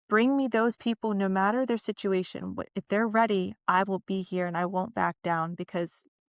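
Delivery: ordinary talk, nothing marked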